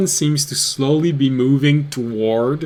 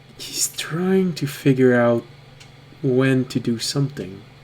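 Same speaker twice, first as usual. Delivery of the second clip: quick, fast half-whispered aside; 4 dB quieter than usual. Game master voicing a character who speaks to a fellow player, half-whispering. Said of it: "she whispers to you".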